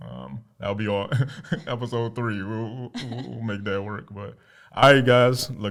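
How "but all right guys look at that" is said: loud, excited calling out. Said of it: "Anytime I get loud".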